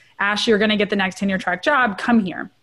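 ordinary delivery

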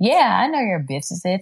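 proud, boastful remark. A mother retells how he now speaks of her business; mimicking a proud remark. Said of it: "he say so proudly now".

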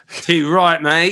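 loud, exaggerated, put-on Australian accent. A self-described Aussieophile trying out an Australian phrase, put-on Australian accent. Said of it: "I'm definitely an Aussieophile".

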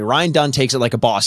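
ordinary talk, nothing marked

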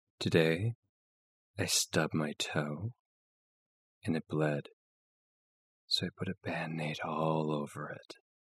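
put-on sultry hush, low, slow and sexy. Asked to do the other person's sexy voice: put-on sexy voice. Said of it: "can I do your sexy voice?".

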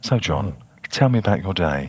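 gentle soothing asmr voice. In the podcast's ASMR episode, after a co-host praises his voice: soft, calming ASMR voice. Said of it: "it just makes me a sense of shiver down".

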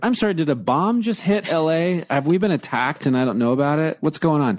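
sarcastic retort. Retelling a reply to someone who flung herself on the bed, retelling own sarcasm. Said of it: "And I just got sarcastic with it".

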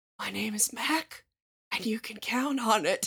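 eerie, creepy, hushed whisper. Imitating a furniture ad pitchman: serial killer-esque whisper. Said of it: "cannot raise his voice above a serial killer-esque whisper".

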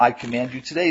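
plain

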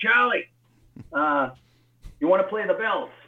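put-on Philadelphia accent. Retelling a phone call from a gruff man from Philly: imitating Frank. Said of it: "Frank's kind of a gruff man from Philly".

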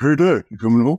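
put-on voice of a sixteen-year-old boy. Retelling a phone call from a sixteen-year-old son: imitating his sixteen-year-old son. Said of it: "that's what he sounds like".

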